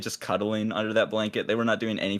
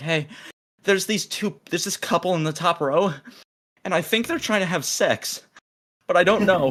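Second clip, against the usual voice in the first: mock-tearful woman voice, much higher; 8 semitones higher than usual. Retelling what a woman in tears said coming out of theater 17, imitating a teary woman. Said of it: "she's like in tears".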